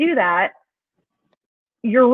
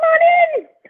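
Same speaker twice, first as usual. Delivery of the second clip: very high, loud, casual tone. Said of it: "They're like".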